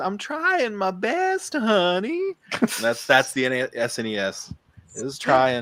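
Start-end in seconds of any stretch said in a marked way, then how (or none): 0.0-2.4 put-on southern little-girl accent, much higher, louder, slower. Retelling a TikTok of a little girl painting nails, southern little-girl accent. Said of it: "has like a southern accent".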